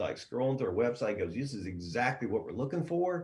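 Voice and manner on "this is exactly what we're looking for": play-acted, over-the-top, eager, pumped, excited voice. Retelling what a pumped-up guy on the phone said, imitating an excited caller. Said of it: "He was excited".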